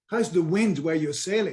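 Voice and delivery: ordinary talk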